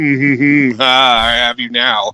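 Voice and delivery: mock smug gloating tone. Speaker retelling a video game character's gloating line, mock-smug.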